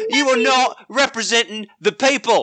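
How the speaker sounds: terrible fake English accent. Imagining listeners across the pond reacting to the podcast, bad English accent. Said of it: "We're going to have the worst English accents ever".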